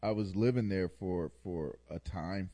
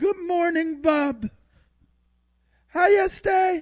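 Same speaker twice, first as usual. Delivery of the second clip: very high, very loud put-on Jamaican parrot voice; 13 dB louder than usual. Discussing a parrot that greeted Bob every morning, doing it in a Jamaican accent. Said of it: "Did he have a Jamaican accent?".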